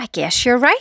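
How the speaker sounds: ordinary delivery, nothing marked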